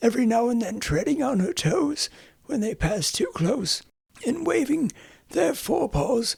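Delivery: ordinary delivery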